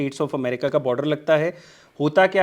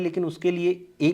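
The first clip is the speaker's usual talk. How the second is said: ordinary talk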